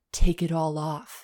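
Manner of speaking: low-voiced delivery. Reading a story aloud, voicing the male character's line: low voice. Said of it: "he says in a low voice".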